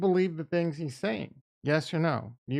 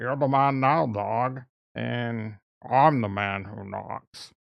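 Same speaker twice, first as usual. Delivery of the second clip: put-on Scottish film-star voice, lower pitch; 4 semitones lower, 3 dB louder than usual. Answering a poll question by doing a Sean Connery impression. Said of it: "My Sean Connery impression is good".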